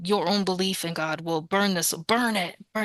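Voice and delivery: imitated intense delivery. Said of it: "it was really intense to hear that".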